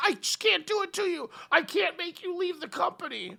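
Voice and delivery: mock very high, tearful sobbing voice. Retelling a wrestling match ending: imitating someone crying. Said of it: "she just starts crying".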